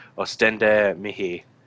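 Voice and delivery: private, inward mutter to oneself. Casting a spell in character, muttering a latin incantation under his breath. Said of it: "I say to myself under my breath".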